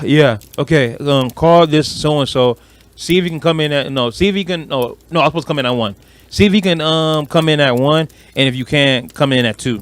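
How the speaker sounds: normal talking voice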